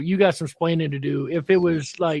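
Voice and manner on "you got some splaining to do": usual speaking voice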